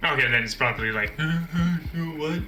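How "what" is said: dazed, groggy, zombie-like confusion, drawn-out uh. Acting out a character waking to an intruder: dazed zombie-like waking. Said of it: "zombie-like reactions".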